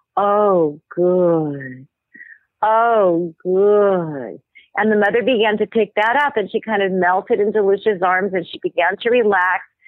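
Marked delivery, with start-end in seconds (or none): 0.2-4.4 low, throaty, guttural whisper, much slower. Retelling how someone whispered in a laboring woman's ear, low guttural whisper. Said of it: "in a very low, guttural voice".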